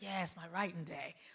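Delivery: put-on excited voice. Retelling a friend's answer on the phone: imitating Ryan Coogler's excitement. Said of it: "that excitement about writing".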